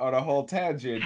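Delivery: ordinary talk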